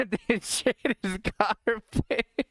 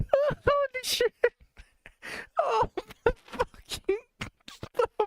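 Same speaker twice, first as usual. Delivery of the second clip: laughing uncontrollably while talking, higher. Reacting to something funny, laughing hard while talking. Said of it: "making me laugh so bad".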